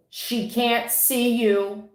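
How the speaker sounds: slow, mild calling out. Retelling a warning yelled to a couple in a parking lot: retelling a yell. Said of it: "So I yelled to the couple".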